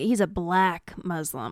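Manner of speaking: two key words hit with hateful emphasis. Retelling the way a man said something, imitating a hateful emphasis. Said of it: "it was a very hateful emphasis on".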